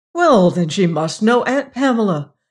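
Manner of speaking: keen, bright-eyed, eager and enthusiastic delivery. John Tennyson answers Margaret about her mother, enthusiastic. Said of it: "said John Tennyson enthusiastically".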